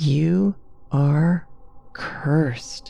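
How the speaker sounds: mumbled inwardly, to itself. Narrator reading Carrie speaking to the shawl as the flames die, muttering. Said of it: "she muttered to it".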